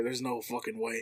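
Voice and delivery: soft, hushed half-whisper under the breath. Retelling what the store manager said walking up: imitating a half-whisper. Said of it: "I just hear him whisper".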